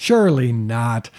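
dripping with sarcasm. Answering a question about government mind control projects: dripping with sarcasm. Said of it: "dripping with sarcasm".

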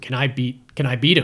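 ordinary talk

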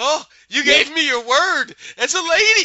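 flustered, very high and loud blurt. Retelling a scene from a show, quoting a character: imitating flustered speech. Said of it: "as he's all flustered".

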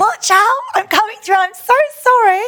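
mock, very high-pitched, carrying shout. Retelling shouting at a lone rider while coming up on him; retelling a shout. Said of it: "so I was shouting at him".

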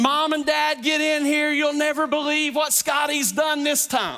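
acted-out, indignant screaming. Retelling jumping out of bed and calling Mom and Dad; reenacting own screaming. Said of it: "I am screaming".

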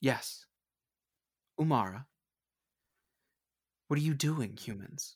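smooth, sleek, silky voice. Narrating the scene, a figure calls down from the cliffs at the boat: silky voice. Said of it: "a silky voice says".

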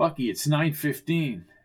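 plain

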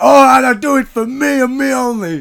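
put-on, very loud, furious, angry outburst. Retelling what a man said as his lines kept failing: mock-angry outburst. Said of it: "he gets all angry and goes".

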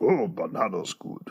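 low, soft little-man voice. Talking about spanish lessons, the speaker does the short mustache guy's voice. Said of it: "the mustache guy goes".

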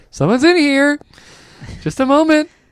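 voice rising to very high pitch. Describing how Mike tells a joke, the speaker imitates Mike, voice going up. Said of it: "he goes up like".

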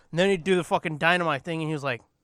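ordinary delivery

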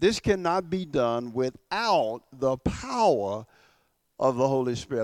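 very slow, deliberate, each word drawn out and weighed. Stressing a point about the Holy Spirit, spoken very slowly. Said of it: "I want to say it very slowly".

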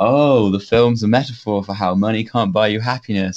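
mock-sarcastic tone. Discussing a film's last shot, retelling a sarcastic remark. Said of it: "I was like sarcastically like".

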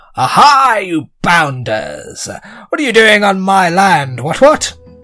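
loud gnome character voice. The narrator voices a gnome confronting the players, in a loud gnome voice. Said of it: "He's quite loud".

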